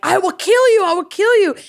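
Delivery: put-on scream, pitched very high. Retelling fighting an attacker in a dream: imitating her own dream screaming. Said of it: "I was screaming".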